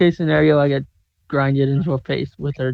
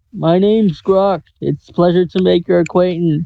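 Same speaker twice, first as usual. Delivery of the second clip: loud shout projected upward to echo; 4 semitones higher, 5 dB louder than usual. Playing a tiny wizard calling up to a giant: shouting up through cupped hands. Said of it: "cup my hands over my mouth so it'll echo".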